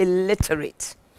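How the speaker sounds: scornful, disdainful contempt laid on "illiterate". Repeating a woman's remark the way she said it: mock-disdainful 'illiterate'. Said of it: "the way she said it, I'm saying it that way, illiterate, with disdain".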